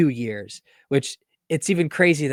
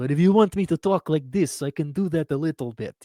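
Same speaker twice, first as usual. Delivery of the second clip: bad, terrible put-on Russian accent; 3 semitones higher than usual. Asked why he talked in a terrible russian accent, carrying on in it. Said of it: "with a terrible Russian accent?".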